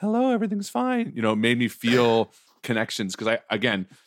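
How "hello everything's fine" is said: put-on very high, haunting, creepy little-boy falsetto. Comparing a film's little boy to Pin, imitating his falsetto. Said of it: "he's got this kind of like falsetto".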